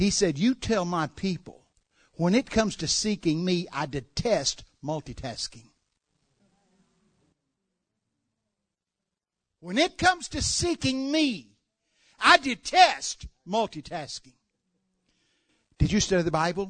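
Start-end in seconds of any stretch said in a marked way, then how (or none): 0.4-14.3 acted-out stern, angry tone. Passing on a message he says he was given for the people, retelling it angrily. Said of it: "And he said it in an angry way".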